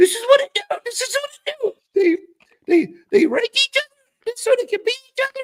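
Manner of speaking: very high, loud, shrill, grating, annoying voice. Retelling a voice heard while walking back to a truck: imitating A K's annoying voice. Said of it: "some aggravating, annoying voice that sounds extremely like A K says".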